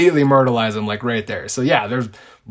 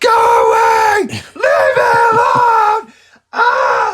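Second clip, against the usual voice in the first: mock panicked screaming, very high and very slow; 6 dB louder than usual. Imagining a terrified woman at trick-or-treaters: imitating a terrified woman screaming. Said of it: "screaming at 'em".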